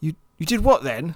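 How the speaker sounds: put-on very English accent, laid on thick. Retelling a student's question about the darts: imitating a very English accent. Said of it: "He had the most English accent in the world".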